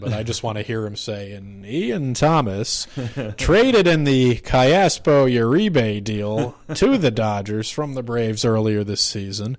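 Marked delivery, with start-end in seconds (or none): 1.3-9.6 bad put-on baseball announcer voice, louder. Imitating a baseball broadcaster calling a player's background: horrible Vin Scully impression. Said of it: "I'm gonna do a horrible Vin Scully impression".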